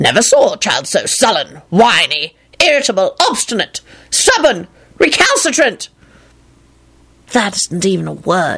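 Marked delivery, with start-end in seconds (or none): 7.3-8.6 low mumble, half under the breath. A boy replies to a man scolding him, mumbled. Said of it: "the boy mumbled".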